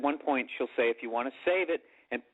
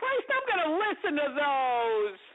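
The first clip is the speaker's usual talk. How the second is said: high, swooping, whiny complaining dad voice. Imitating their dad reacting to the records being taken, in a whiny voice. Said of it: "how my dad whines".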